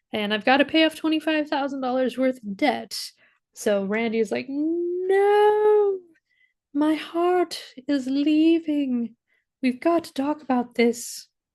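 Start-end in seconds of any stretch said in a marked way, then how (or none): 4.4-11.2 put-on high, very slow, drawn-out old-lady voice. Retelling Randy's reaction to someone leaving for Seattle, in a grandma voice. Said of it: "I don't know who has the grandma voice that I just used".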